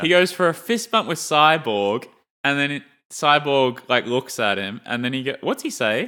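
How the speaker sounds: ordinary talk, nothing marked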